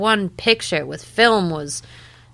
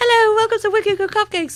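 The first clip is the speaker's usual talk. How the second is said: quick, put-on British accent. Retelling how they answered the phone at work, in a British accent. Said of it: "answer the phone in a British accent".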